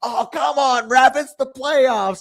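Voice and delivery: very high, loud, slow, drawn-out screaming. Retelling a hockey player in the penalty box yelling at refs: imitating someone screaming. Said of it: "He's screaming at the refs".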